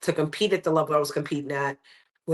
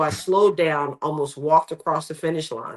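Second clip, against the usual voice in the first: usual speaking voice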